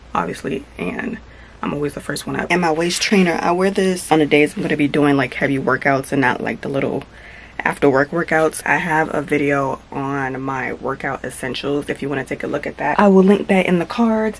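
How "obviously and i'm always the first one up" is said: soft, hushed voice. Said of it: "I'm trying to whisper".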